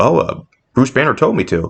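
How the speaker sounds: ordinary delivery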